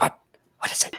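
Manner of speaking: whispered, in character voice. Voicing a small creature whispering in a player's ear: whispering in character. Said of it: "He's, like, whispering in your ear".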